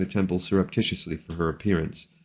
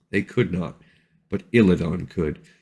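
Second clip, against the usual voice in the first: usual speaking voice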